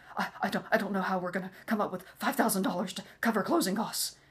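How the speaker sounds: fast, rattled-off, panicky rambling. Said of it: "starts having a panic attack".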